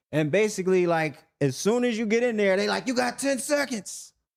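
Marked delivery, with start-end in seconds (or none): 2.8-4.1 put-on, high, screaming yell. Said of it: "And they screaming".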